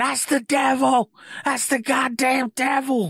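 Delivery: screamed out in a very high voice. Joking about a scene from a clip, imitating a woman screaming.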